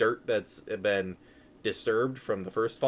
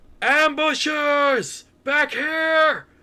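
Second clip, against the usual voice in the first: very high, very loud, full-volume alarmed yell; 8 dB louder than usual. Voicing a character who turns away and calls to his distant crew: yelling as loud as possible. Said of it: "just as loud as he can, uh, yells".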